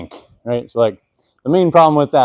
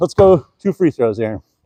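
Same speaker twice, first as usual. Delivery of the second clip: out of breath, slower. Speaker shooting basketball against a defender, out of breath. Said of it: "Let me catch my breath".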